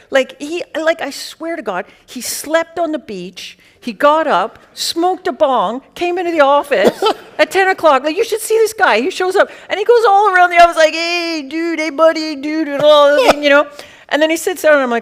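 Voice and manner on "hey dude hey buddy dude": easygoing, laid-back California surfer-dude voice. Retelling how a guy greeted everyone in the office, California guy voice. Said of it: "he's like real California guy".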